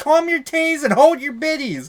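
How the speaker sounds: shrill, very high, loud exasperated yelling. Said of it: "I was yelling at Cookie".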